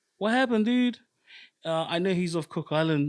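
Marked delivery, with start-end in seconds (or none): 0.2-1.0 mock shrill, very high screaming yell. Retelling shouting at a player during a game: retelling own scream. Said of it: "I'm screaming out".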